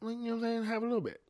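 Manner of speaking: coaxing, pitched high. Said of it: "Someone gave you a spoon and was like".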